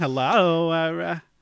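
New York Long Island accent. Greeting the other speaker jokingly in a put-on Long Island accent. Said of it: "So I'm gonna talk like this from now on".

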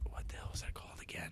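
very quiet, hushed whisper. Trying to recall a movie title while talking about films, whispering. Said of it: "I'm whispering".

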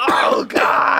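full-throated shrieking at the top of the lungs. Imitating a wrestler shrieking every time he got hit: Ric Flair shrieking. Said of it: "he's shrieking".

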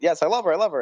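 ordinary talk, nothing marked

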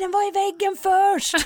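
high, put-on shouting. Speaker retells what two other players shouted during the game, retelling a shout. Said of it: "då skriker två andra".

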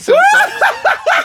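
mocking girl voice, high, slow, loud, laughing.

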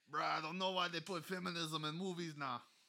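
put-on very loud, fast down-to-Bali accent. Imitating how another speaker talks to tease him: imitating a friend's accent. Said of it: "I don't talk like that".

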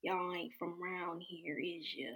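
eerie, creepy, very soft, hushed horror-movie voice. Telling about going into a diner with Mom, imitating the lady there in a horror-movie voice. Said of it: "You sound just like a horror movie".

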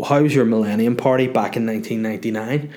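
ordinary delivery

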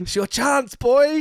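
very high-pitched, loud, pumped-up hype scream. Retelling a wrestler yelling at a rival during a match: imitating someone screaming. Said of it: "screaming at him".

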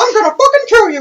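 very high, shrill, furious yell. Recalling a bit with friends, mock-angry Mickey Mouse voice. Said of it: "this angry Mickey voice".

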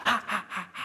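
soft, eerie moan.

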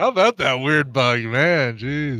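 dragging, unnaturally slowed-down voice. A speaker whose voice others hear slowing down, in a slowed-down voice. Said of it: "Do you hear him slowing down?".

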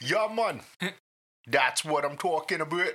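put-on rough Jamaican accent. Trying out voices for a character, the speaker attempts a rough Jamaican accent. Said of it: "Jamaican accent".

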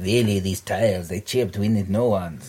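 put-on Polish accent on English. Quoting what someone said when asked what a Polish accent sounds like. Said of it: "What does a Polish accent sound like?".

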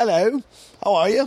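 breezy acted British accent. Retelling a comedian walking on stage with a pint: imitating a british accent. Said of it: "in the British".

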